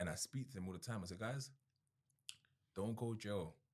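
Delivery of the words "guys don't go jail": heartfelt, emotional, very slowly drawn-out delivery. Telling others what he says to friends about jail: getting emotional. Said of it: "I'm even getting emotional saying this".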